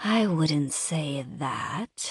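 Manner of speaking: breathy delivery. Narrator teasing the man holding her, saying it breathily. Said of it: "I say breathily".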